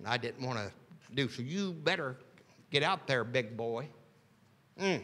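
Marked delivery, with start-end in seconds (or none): 1.4-3.9 firm, pushing dad voice. Imitating a father telling him to get going: imitating my daddy. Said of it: "Sounds like my daddy".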